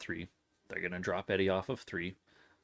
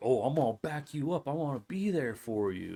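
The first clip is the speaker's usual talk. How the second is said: put-on British accent, pitched up; 6 semitones higher than usual. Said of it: "except in a British accent".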